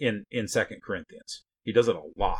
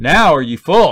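loud, slow, sarcastic reading. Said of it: "Here's his sarcasm coming back again".

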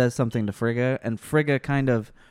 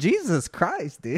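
ordinary delivery

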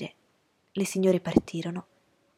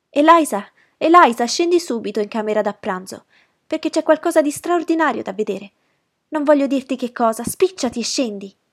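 much louder, higher, agitated, breathless shout; 5 semitones higher, 9 dB louder than usual. Narrating Maria, who ran up the stairs, calling out to Elisa: agitated breathless shout. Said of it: "tutta agitata e quasi senza fiato Gridò".

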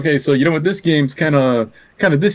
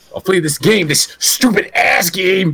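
ranting, pitched way up high; 10 semitones higher than usual. Describing a friend's favorite impression, redoing it: Angry Video Game Nerd impression. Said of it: "be like".

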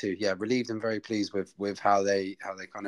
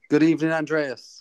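full of energy, raised and high-pitched voice; 7 semitones higher, 7 dB louder than usual. Opening the show, the host greets andreas: energetic. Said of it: "there's energy in that voice".

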